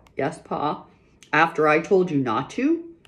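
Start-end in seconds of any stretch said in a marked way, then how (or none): 1.4-2.9 dreadful, fearsome voice, even more dreadful. Pa questions his daughters who disobeyed him, in a more dreadful voice. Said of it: "Pa said in a more dreadful voice".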